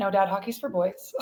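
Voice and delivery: ordinary talk, nothing marked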